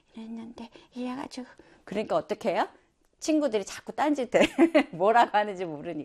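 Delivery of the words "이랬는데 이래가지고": tiny, timid, soft whispering voice. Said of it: "목소리는 작아".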